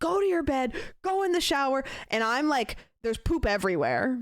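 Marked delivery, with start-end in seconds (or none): 0.0-1.8 high, screamed yelling. Retelling a messy moment with two dogs at home, reenacting screaming at the dogs. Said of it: "I'm screaming at both of these dogs".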